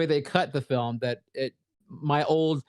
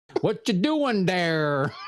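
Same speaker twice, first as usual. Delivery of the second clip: put-on slow, heavy American accent with hard consonants; 3 semitones higher than usual. Imitating foreign viewers doing an american accent: imitating foreigners doing american accent. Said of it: "they'll do American accents".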